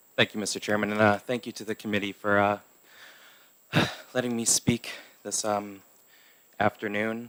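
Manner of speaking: soft, a little winded, catching breath. Thanking the chairman and committee before speaking on a bill, a little out of breath. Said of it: "a little out of breath".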